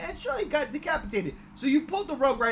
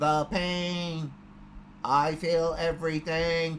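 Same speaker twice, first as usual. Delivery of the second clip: creepy, low, slow computer-generated synthesized voice; 4 semitones lower than usual. Imitating a girl who can only talk through a computer, in a creepy computer-generated voice. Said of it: "computer generated voice".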